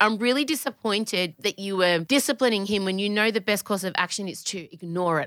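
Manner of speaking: ordinary talk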